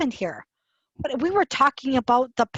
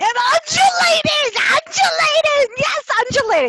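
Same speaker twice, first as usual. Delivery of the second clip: very high, shrill, loud shrieking scream; 7 dB louder than usual. Reading a sentence aloud, then repeating its last word: screaming. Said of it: "My screaming made the audio".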